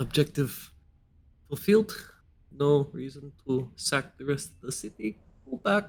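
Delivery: soft mutter under the breath. A general side-eyes an elf, then speaks under her breath. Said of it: "And she says under her breath".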